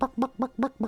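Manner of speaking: very high squawking chicken sound. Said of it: "chicken sound effect".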